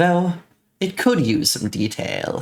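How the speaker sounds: spooky narrator voice with swooping pitch. Doing a narration voiceover for a character, in a creepy narrator voice. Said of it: "a creepy narration voiceover for this guy".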